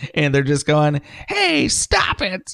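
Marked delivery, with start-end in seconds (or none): 1.3-2.5 put-on very high, small little girl voice. Picturing little girls with sashes and cookies, doing a Girl Scouts impression. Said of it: "That's where your impression of the Girl Scouts ended".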